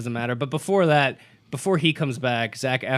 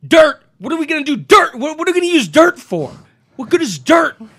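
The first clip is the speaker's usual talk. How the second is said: pissed-off yelling, very shrill and loud; 11 dB louder than usual. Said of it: "the way Zac Efron delivered it".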